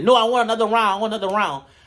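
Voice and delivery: play-acted, worked-up, frantic yelling, mild and held back. Retelling a fighter pulled back after a brawl: imitating someone screaming. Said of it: "She's screaming, going crazy".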